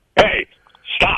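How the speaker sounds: deep, commanding voice, sunk low. Retelling an old radio alley bit: deep voice like Sheldon Leonard. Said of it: "like Sheldon Leonard with the deep voice".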